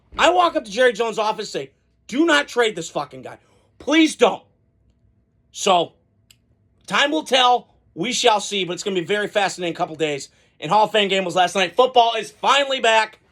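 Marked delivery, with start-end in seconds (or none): 2.1-4.4 mock fired-up, heated pleading with swooping pitch. Acting out walking into an office to plead: pretend heated plea. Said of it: "I'm heated right now".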